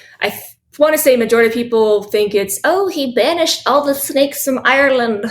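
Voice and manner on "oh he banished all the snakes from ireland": sudden bad, put-on Irish accent. Summing up a popular belief, accent slipping out: bad Irish accent. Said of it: "that's my shitty Irish accent".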